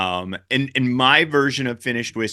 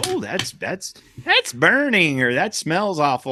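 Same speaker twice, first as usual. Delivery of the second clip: voice climbing high, swooping, sing-song; 6 semitones higher than usual. Describing how some drinkers react to strong whiskey, voice going up. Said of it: "I like how your voice went up".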